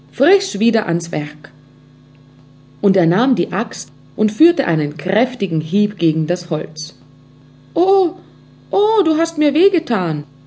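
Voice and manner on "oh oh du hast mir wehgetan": small, high voice crying out in pain. A little voice cries out as the axe strikes the wood, crying out in pain. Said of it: "rief das Stimmchen schmerzlich aus".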